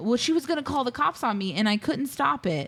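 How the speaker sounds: ordinary talk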